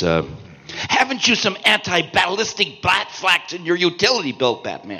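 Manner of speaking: performed with energy. Voice actor recalling a hard-to-say line his character said, energetic character line. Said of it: "my character said them energetically".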